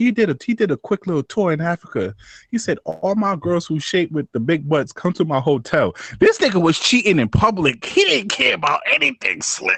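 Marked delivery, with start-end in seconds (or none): none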